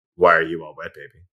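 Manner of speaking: cold deadpan put-on voice. Quoting a line from a film scene: cold Ben Kingsley delivery. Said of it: "Ben Kingsley stone cold face saying".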